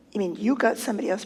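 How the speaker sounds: ordinary delivery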